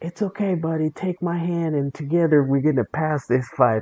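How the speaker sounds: cutesy, syrupy, sugary put-on sweetness. Retelling a teammate's overly nice messages to another player: imitating fake sweet talk. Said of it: "you're being so fake sweet".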